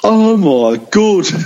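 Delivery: put-on Birmingham accent, spoken at very high pitch. Retelling how a man attacked on the pitch by a fan spoke, imitating a Brummie accent. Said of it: "in such a clearly Brummy accent".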